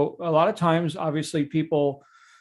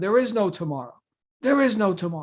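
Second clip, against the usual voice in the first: mock insistent, driving, repeated shouted delivery; 4 semitones higher than usual. Retelling a movie beach scene where a friend admonishes: imitating Apollo Creed yelling. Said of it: "he's yelling at him".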